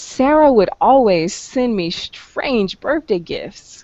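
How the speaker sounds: mildly irritated, put-upon, slightly annoyed intonation. Saying a sentence typed in the chat box with slightly annoyed intonation. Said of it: "listen to my intonation. ... I'm a bit annoyed at it".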